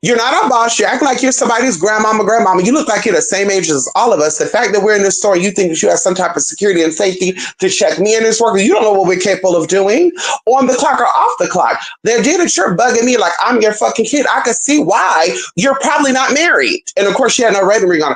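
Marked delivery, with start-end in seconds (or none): none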